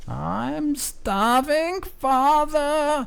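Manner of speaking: very high, unearthly, inhuman screaming voice. Narrator voicing a creature heard from below the chapel floor, inhuman scream. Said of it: "you can hear this inhuman scream".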